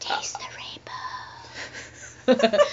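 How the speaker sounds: put-on eerie, breathy whispered child's voice. Introducing this week's candy, the speaker says the slogan in a creepy child voice. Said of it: "Cue in creepy child voice".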